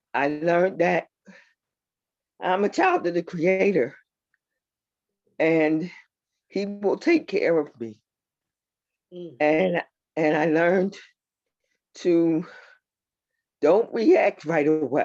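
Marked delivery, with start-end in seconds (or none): 0.1-8.0 a little overcome with feeling. A speaker in a conversation shares a personal lesson, a little emotional. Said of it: "forgive me if I get a little emotional".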